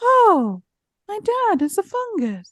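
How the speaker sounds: mock flat, lifeless, wooden reading, very high pitch. Retelling an actress reading off index cards: imitating a flat, wooden line reading. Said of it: "Give me a little something".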